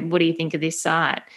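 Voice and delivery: ordinary talk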